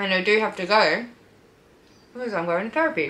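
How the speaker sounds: talking through a mouthful of food. Speaker eating avo toast while filming, talking with mouth full. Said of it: "I had to finish my mouth full of food".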